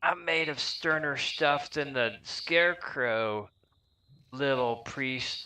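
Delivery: put-on high, witchy cackling old hag voice. Narrating a game, the speaker voices her reply to the little priest, cackling. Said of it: "She cackled, saying".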